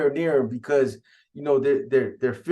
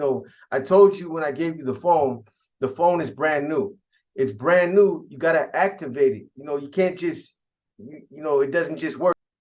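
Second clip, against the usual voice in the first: plain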